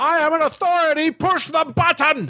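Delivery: screaming, demanding villain voice. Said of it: "Robin Williams is just screaming like".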